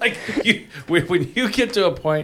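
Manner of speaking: high-pitched speech through loud, big laughter. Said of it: "sorry for, for la-, laughing so loud".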